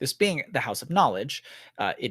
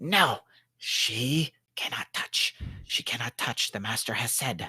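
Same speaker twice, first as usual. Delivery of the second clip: sibilant, hissing whisper. The book speaks to Rosalind again, in a hissing whisper. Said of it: "it almost sounds like a, a hissing whisper".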